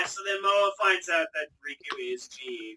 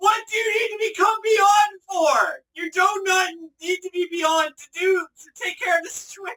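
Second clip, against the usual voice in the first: shrill, very high, very loud exasperated yelling; 9 dB louder than usual. Recalling a character transforming on screen, retelling yelling at the TV. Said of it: "I'm just yelling at the TV going".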